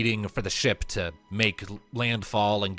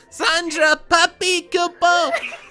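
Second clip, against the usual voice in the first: very high, loud, cute adorable squealing voice; 9 dB louder than usual. Narrating a game scene, a voice calls out behind a player's character: high-pitched adorable squeal. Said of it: "a high-pitched, adorable voice loudly squealing".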